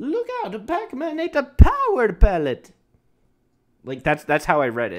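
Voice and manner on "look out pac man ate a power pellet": very high, loud, sing-song video-game plumber voice shout. Showing on a stream how you read a message about a game, use a Mario voice. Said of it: "I read that in Mario's voice".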